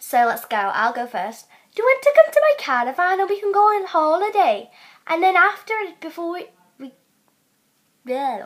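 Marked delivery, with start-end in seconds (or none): 1.7-4.7 put-on Welsh accent, pitched higher. Taking turns doing accents, going first with the Welsh one: Welsh accent. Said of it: "we're going to do Welsh next".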